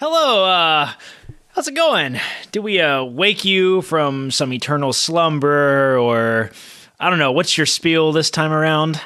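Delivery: self-assured, strutting, breezy, swaggering confidence. Retelling how a companion strutted up to a guy, mock-confident. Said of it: "sort of confidently like struts up".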